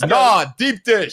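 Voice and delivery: put-on New York accent. Retelling a pizza commercial where a guy answers about pizza styles, new york accent. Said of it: "the guy with the New York accent goes".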